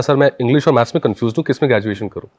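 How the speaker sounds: normal talking voice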